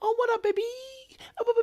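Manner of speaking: put-on very high-pitched childish baby talk. Imitating how she always talks to someone, in a childish baby voice. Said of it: "it's always like baby voice".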